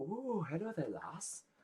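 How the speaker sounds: high, slow, unhurried lady voice. Describing a tavern scene, voicing a lady who walks past. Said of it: "a lady walks past and goes".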